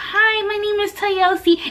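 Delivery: sugary-sweet cute voice. Retell introducing yourself to your neighbor when the professor asks, put-on nice, cute, sweet voice. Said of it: "in my nice, cute, sweet voice".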